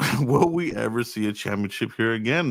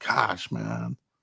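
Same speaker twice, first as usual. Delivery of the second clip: put-on older man voice, quieter; 5 dB quieter than usual. Describing how a man's voice has aged, imitating that older man voice. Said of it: "he now has that older man voice".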